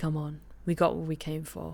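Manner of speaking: muttered delivery.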